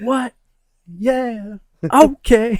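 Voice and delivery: very high-pitched, loud yelling.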